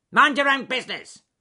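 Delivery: very high-pitched, very loud, snappish. A bad-tempered beaver answers a bear who asks what he is doing: snapping. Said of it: "snapped Ben the bad-tempered beaver".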